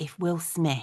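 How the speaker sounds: whispering. Asking the other speaker a question about a crush: whispering. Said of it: "but let's whisper".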